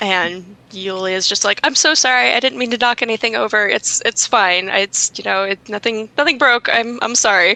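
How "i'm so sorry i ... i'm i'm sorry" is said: anxious, nervous, rambling babble. Voicing Yulia apologizing after knocking something over: nervous babbling. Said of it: "Just kind of nervous babbling".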